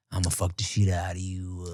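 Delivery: put-on seductive bedroom voice. Acting out basic bedroom talk as a joke: mock dirty talk. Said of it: "the base level dirty talk".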